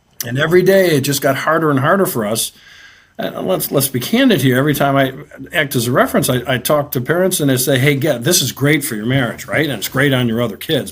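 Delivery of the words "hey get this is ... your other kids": mock sarcastic tone. Retelling what gets said to parents, imitating sarcasm. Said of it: "being sarcastic".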